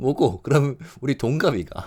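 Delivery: regional Korean dialect sound. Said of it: "he says that in a dialect tone".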